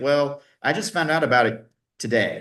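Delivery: plain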